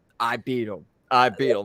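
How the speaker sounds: heavily sarcastic, mocking, dripping sarcasm, repeated twice. Retelling CM Punk's remark about a match: imitating CM Punk, sarcastic. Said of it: "Punk so sarcastically".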